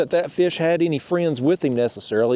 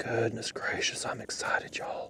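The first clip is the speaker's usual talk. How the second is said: very quiet, hushed, barely voiced whisper; 4 semitones lower, 13 dB quieter than usual. Unhooking a big fish and excited about it, whispering. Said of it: "I don't know why I'm whispering".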